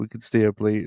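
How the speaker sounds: ordinary delivery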